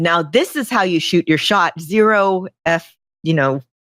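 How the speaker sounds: ordinary talk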